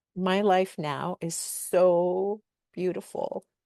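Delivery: moved and slow, the word "so" stretched out. Sharing how life changed after healing, getting emotional. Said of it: "I'm gonna get emotional here".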